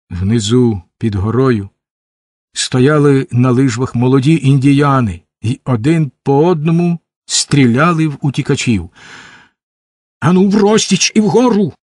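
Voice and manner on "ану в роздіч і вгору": high-pitched shouting. Narrator reads an order to fleeing companions while being shot at, shouted. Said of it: "крикнув смок".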